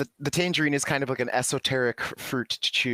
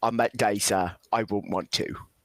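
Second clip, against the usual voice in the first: put-on British actor voice, lower; 4 semitones lower than usual. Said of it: "I sound like Michael Caine".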